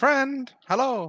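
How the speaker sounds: very high-pitched, loud yell carrying across distance. Voicing a half-elf calling to someone walking away: yelling out in character. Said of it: "You hear the half-elf yelling out to you".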